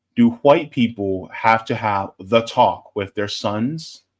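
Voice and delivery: solemn, grave, serious reading voice. Reading a listener's question aloud: serious voice. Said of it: "Let me read this in my serious voice".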